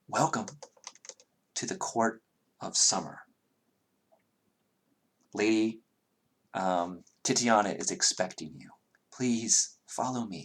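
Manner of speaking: gracious, soothing, pleasing, calm tone. Narrator voicing an androgynous creature greeting the listeners, in a pleasing, calm tone. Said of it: "to you in a very pleasing, calm tone".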